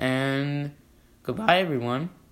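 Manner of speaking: voice cracking and breaking partway through. Signing off the episode to listeners, voice cracking. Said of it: "my voice cracked".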